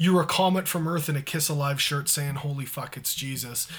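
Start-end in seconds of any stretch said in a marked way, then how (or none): none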